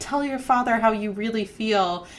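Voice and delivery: ordinary talk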